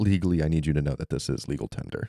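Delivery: imitated whispering. Retelling how they lean in about the credits: imitating someone whispering. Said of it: "lead in and start whispering".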